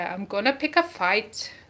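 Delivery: put-on Scottish accent. Speaker quoting a Braveheart scene to Suze, in a William Wallace Scottish accent. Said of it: "I don't know if that's a good Scottish accent".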